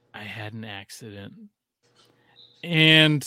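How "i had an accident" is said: little, tiny, very quiet, soft half-whisper. Retelling what was heard in bed at seven this morning: imitating a little half-whisper. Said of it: "I just hear this little whisper".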